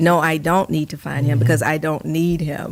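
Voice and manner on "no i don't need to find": ordinary delivery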